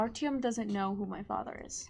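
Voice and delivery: low quiet voice. Pulling a companion aside to tell a secret, speaking very low. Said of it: "just very lowly say".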